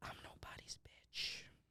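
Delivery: very quiet, breathy whisper under the breath. Retelling what the teacher said during a test: imitating a whisper. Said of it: "came up to him and whispered".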